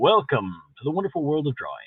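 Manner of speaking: deep, swooping, grand show-intro announcer voice. Showing how you'd do the intro of your drawing show: deep voice. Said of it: "I'm using my deep voice".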